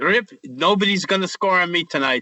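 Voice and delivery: put-on English spoken with a Czech accent. Retelling what a goalie told him at morning skate: imitating Dominik Hasek's Czechoslovakian accent. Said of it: "in his Czechoslovakian accent".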